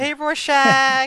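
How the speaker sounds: put-on upbeat, cheerful voice. Retelling how a prisoner first greets Rorschach: imitating upbeat talk like to a kid. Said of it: "all upbeat".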